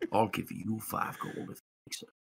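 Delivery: breathy, hushed, secretive whispered aside. A character privately offers another character a bet, whispering. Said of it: "he whispers to Imran".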